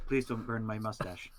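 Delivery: discreet, private, understated delivery. Pleading in character with a fire-wielding opponent mid-fight: said quietly. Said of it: "I say quietly".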